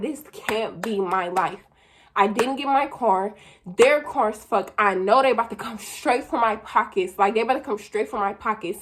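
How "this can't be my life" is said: slow, panicked, despairing tone of disbelief. Retelling losing it after the fire: reenacting her own panicked words.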